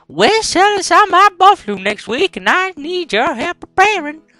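Western speaking style. Playing a western game, the speaker voices a character talking to his little brother: put-on western voice. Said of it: "If you're wondering why I'm speaking like this, it's because this is a Western game".

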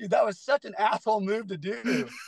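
words spoken through laughter. Speaker retelling what a man said over lunch afterwards, imitating someone laughing. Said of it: "he was laughing going".

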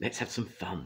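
whispering. Three engines, watching another engine work, speak among themselves, whispered. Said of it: "they whispered".

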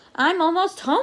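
high, eager, excited cry. A bee nears his home after a long walk, excited. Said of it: "cried the greedy bee excitedly".

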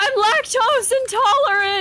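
high, crying shout. Retelling how a man, running from the room, answered an offer of milk: retelling a teary yell. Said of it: "like almost in tears running from the room, yells".

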